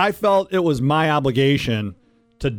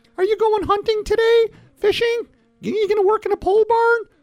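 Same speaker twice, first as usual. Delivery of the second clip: put-on woman's voice, pitched way up. Acting out a wife greeting her husband coming home after work, woman impression. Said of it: "This is my best woman impression".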